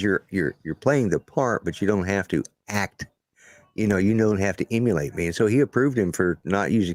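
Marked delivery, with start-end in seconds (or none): none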